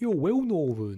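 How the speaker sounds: bad put-on Cockney accent. Speaker repeats a phrase in different voices, in a terrible Cockney accent. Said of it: "almost like Cockney or something. Terrible Cockney".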